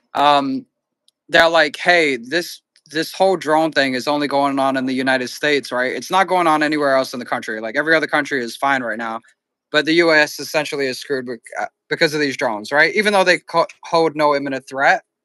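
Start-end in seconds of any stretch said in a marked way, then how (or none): none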